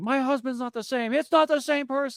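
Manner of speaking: frantic woman, freaking out, very high-pitched. Retelling a scene where a lady at a party freaks out, imitating a frantic woman. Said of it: "another lady that's freaking out".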